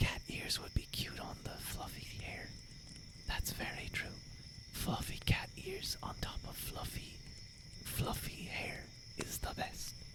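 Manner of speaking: hushed, soft whispered chatter throughout. A streamer answers viewers' chat comments, whispering. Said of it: "I have to whisper".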